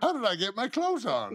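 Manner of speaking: put-on silly old voice, very high and loud. Guests on a show riffing in stupid voices, speaking in a silly old-person voice. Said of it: "talking in these stupid voices".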